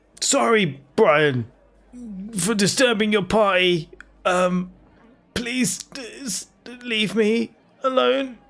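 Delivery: high, drawn-out, tearful crying through words. Voicing a hurt bugbear keeled over on the floor: crying while talking.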